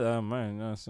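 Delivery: quiet mumbling, muttered under the breath. Retelling what the dad said about relationship advice: imitating a mutter under breath. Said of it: "under his breath".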